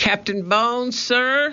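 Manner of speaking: very high, carrying, called-out shout. Reading a character calling through the cabin window to the captain: shouted. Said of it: "he shouted".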